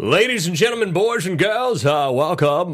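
monster character voice. Podcast host welcoming listeners, doing his Herman Munster impression. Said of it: "this is my Herman Munster impression".

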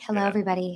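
quiet, hushed morning voice. Imitating Trey greeting everybody in the morning: Trey's quiet hushed morning voice. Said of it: "his, like, quiet, hushed morning voice".

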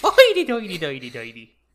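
over-the-top, exaggerated, put-on stage Irish accent. Insulting people in accents, now trying a mock Irish accent. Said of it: "Can I go with the Irish next?".

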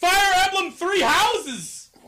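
shrill, very high pitched, loud shouted outburst. Answering one's own question about what else would go on there: yelling. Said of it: "Why are you yelling?".

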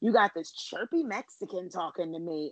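acted, venomous, spiteful delivery. Retelling what Leanne said about Carrie, imitating a venomous tone. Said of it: "such venom in her voice".

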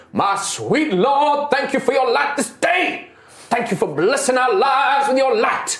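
rapturous, fervent, very high-pitched voice. Voicing a priest kneeling toward the setting sun, arms outstretched: fervent prayer to the sun. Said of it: "he holds out his arms like this, and he's like".

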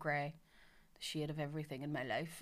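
put-on flat delivery. Retelling a boy's quip at home: imitating a deadpan delivery. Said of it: "he's so deadpan".

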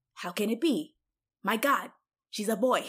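play-acted stunned, shocked, astonished disbelief. Retelling a movie character's reaction to the twist: imitating a shocked character. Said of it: "and Ronnie goes".

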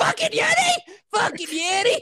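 very high, slow, drawn-out shriek. Imitating Tina three sheets to the wind: imitating Tina screaming. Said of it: "Start screaming every other word".

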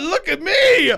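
high, thrilled, excited show-off exclamation. Retelling a parent showing off a new shirt: imitating an excited parent. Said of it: "Doing the whole show".

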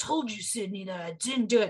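put-on gruff superhero voice.

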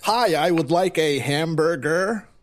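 slow, exaggerated, overdone fake American accent. Showing how people overdo American accents: exaggerated American accent. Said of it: "have you ever heard people do American accents?".

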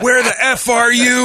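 very high, angry, furious screeching. Retelling a woman on the phone with her husband: imitating a woman screaming. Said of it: "she's just screaming at this dude".

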